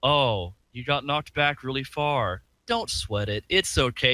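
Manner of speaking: mock-condescending narrator voice. Retelling what the game's narrator guy says: mock-condescending narrator. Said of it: "Condescending bastard".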